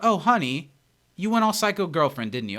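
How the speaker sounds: sweet, fond delivery, leaning on "honey". Retelling how a TV character delivers a line: imitating Britta's delivery. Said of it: "The way that she delivers it is like".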